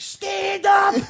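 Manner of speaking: high, drawn-out, furious yell. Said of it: "what they were yelling".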